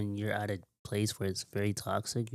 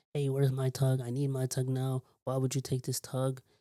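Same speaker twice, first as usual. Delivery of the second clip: acted-out, half-yelled, mild yelling tone; 4 semitones higher than usual. Retelling how she yelled at him over a tug, imitating a woman yelling. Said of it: "she just started yelling at him".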